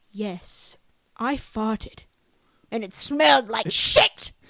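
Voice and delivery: loud put-on English accent, talking monkey toy voice. Speaker recreates what the monkey said once set to an English accent: English accent. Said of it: "I put it in an English accent and it went like this".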